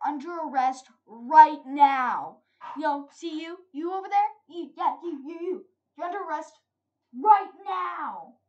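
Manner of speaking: weird, shrill, very loud delivery. Retelling a scene, imitating the way a character said the line: imitating a weird line delivery. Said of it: "just the way he said".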